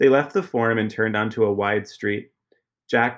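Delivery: ordinary delivery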